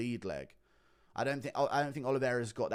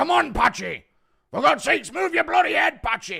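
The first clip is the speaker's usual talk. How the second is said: very loud, very high, hoarse yelling; 13 dB louder than usual. Impression of a man screaming during a fight: screaming as John Fury. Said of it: "Impression of John Fury screaming at Patchy Mix".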